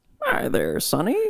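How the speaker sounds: put-on elderly Southern man voice. Asked to go old man voice right now, in a southern old man voice. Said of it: "go old man voice right now".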